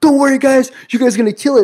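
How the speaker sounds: loud, high, encouraging pep-talk shout. Retelling how the parents reacted to the line: imitating someone screaming. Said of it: "they kinda screamed".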